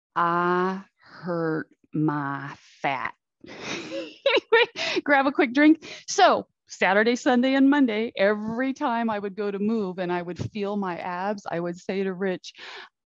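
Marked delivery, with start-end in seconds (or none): 0.2-3.2 very slow, drawn-out Southern drawl. Quoting a comedian's line from his skit, in a Southern drawl. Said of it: "in a Southern drawl".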